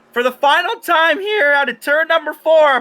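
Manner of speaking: voice cracking and breaking. Commentator calling the final lap out of turn four, voice cracking. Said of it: "Apologies for my voice crack".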